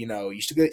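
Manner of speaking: ordinary talk, nothing marked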